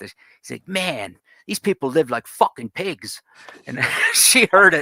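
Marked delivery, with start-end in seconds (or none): 0.7-3.2 put-on Delaware townie accent. Retelling a man's remark that she overheard, imitating Delaware townie accent. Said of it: "in his typical Delaware, the sort of the towny accent".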